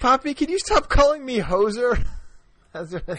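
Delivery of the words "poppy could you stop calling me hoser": put-on higher-pitched girl voice. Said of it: "that's what she said today".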